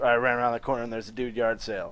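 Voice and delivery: ordinary talk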